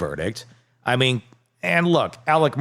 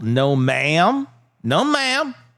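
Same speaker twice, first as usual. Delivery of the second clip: clumsy, bad fake Southern accent, very slow; 4 semitones higher than usual. Admitting to being bad at accents, attempting a bad southern accent. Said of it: "that's terrible".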